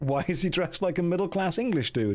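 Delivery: ordinary delivery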